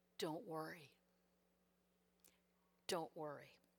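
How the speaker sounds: hushed, deep voice, utterly calm. Speaker retells what God said back to their screams, in a very calm tone. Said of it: "God said in a very calm tone".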